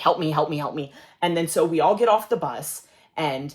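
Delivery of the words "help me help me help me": acted panicked pleading, faster. Retelling asking a chaperoning teacher for help after losing twenty dollars, retelling panicked pleading. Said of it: "I'm like panicking".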